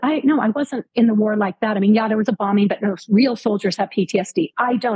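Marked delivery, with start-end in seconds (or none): none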